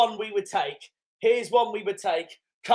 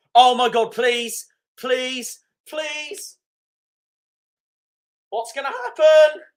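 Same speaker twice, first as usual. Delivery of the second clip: loud pleading voice breaking and cracking; 4 semitones higher, 6 dB louder than usual. Waiting for the next team drawn in a cup tie: voice cracking. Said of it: "I've got my voice cracked".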